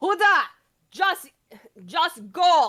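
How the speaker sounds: loud, high-pitched shout. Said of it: "And I just kinda yell".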